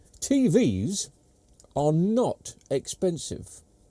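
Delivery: very slow, deliberate, word by word. Announcing shocking news to the listeners, very slowly. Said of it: "I'll say it very slowly".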